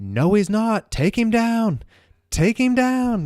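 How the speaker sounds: shrill, very high-pitched, drawn-out yelling. Retelling watching a fight on TV: imitating own yelling at the TV. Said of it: "I'm sitting here yelling at the T V".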